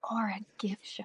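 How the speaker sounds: quiet, soft whispered aside. Speaker retelling what she whispered to him, retelling a whisper. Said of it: "she just whispers".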